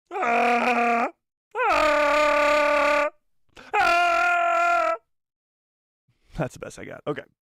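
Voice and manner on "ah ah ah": shrill, stretched-out creature roar. After saying they're terrified but must commit, doing a Chewbacca roar impression. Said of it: "I'll do a chewy".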